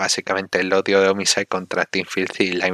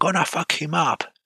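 play-acted high, fired-up ringside shout; 9 semitones higher than usual. Speaker describing a wrestling match retells a wrestler's shout, retelling a shout.

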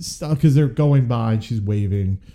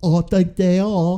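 put-on odd, hard-to-place, high Eastern European accent; 8 semitones higher than usual. Retelling a movie scene, the speaker quotes a woman's reply in a weird Eastern European accent. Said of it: "she has a weird accent".

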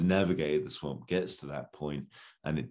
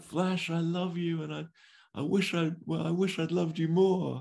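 put-on scream, much higher pitch, slower; 13 semitones higher than usual. Recapping a story chapter, imitating Dale screaming from below. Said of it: "Dale like screams from below".

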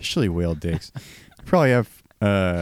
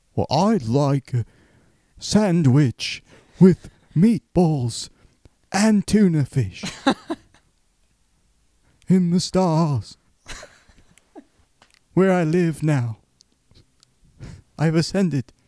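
put-on very high-pitched, babyish voice; 10 semitones higher, 3 dB louder than usual. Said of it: "give me [name] ordering a Subway sandwich".

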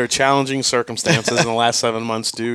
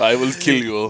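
put-on Russian mobster accent. Joking about how a man's voice changed, in a Russian mobster voice. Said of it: "he turned into like a Russian mobster".

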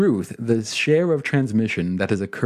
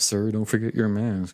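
put-on grumbling voice, quieter and faster; 6 dB quieter than usual. Retelling being told off about a mask in a store: imitating a grumbling employee. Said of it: "I've been grumbled at by an employee".

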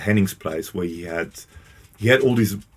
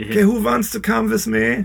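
put-on German accent. Imitating Henning's mum asking who wants to come, Henning's mum, German accent. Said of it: "That was my accent, German accent".

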